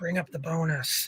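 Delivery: imitated whispered voice. Retelling how a character whispers to his buddy: imitating a whisper. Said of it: "he's whispering to his bigger buddy".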